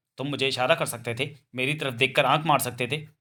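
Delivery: ordinary delivery, nothing marked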